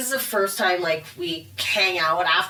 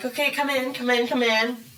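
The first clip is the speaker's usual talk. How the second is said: play-acted, panicked and flustered; 4 semitones higher than usual. Retelling opening the door to a worried visitor, retelling flustered panic. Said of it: "And I'm still like panic mode".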